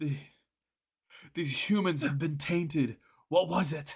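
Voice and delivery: loud, shrill scream full of outrage. Voicing elves confronting a dwarf in the game, screaming. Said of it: "They scream".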